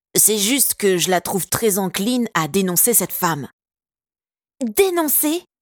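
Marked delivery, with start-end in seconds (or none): 4.6-5.4 indignant, high, outraged shout. Someone retorts to a boy's protest, with an outraged shout. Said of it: "Hurla Betty, outrée".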